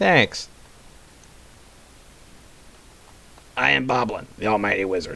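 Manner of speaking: little goblin character voice. Narrator voices the little goblin Boblin introducing himself: Boblin's goblin voice. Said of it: "says the little goblin".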